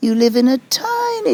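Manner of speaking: squeaky, high voice swooping and climbing upward. Retelling what Swami said at an interview: imitating Swami's squeaky voice. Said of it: "his voice went squeaky up there".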